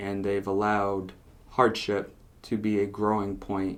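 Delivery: plain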